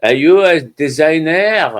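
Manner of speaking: put-on heavy, laid-on French accent. Retelling what a man in the morning fog asked them, in a thick french accent. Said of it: "in this really thick French accent".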